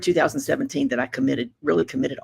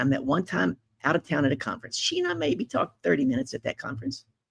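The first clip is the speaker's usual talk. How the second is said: plain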